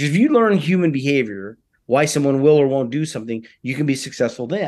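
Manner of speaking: ordinary talk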